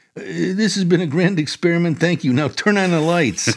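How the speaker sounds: mock quavering, unsteady, high quivery voice. Retelling what one of their group said in the dark, imitating a quivery voice. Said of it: "in a quivery voice said".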